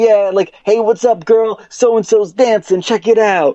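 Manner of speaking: woman's high, excited yelling out. Retelling a woman in voice chat greeting someone, imitating her yelling. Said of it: "she just starts yelling things".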